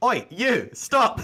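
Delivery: loud, high, shrill shout. Voicing a guard who calls out to give chase: guard shouting a call. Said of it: "you hear the call of".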